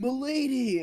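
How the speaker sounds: very high, lofty, regal courtly voice. Retelling how a stranger in costume greeted his girlfriend: imitating a regal, courtly manner. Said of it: "he's acting like this".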